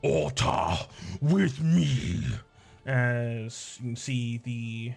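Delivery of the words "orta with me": guttural, booming troll-like war cry. Voicing a troll leader calling an ally to battle: big guttural booming voice. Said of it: "Zirmalog's sort of big guttural voice sort of boom out".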